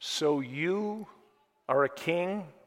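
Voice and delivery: very slow, drawn-out, sarcastic delivery. Reading Pilate's question to Jesus aloud: imitating a sarcastic question. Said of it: "Very sarcastically he said it".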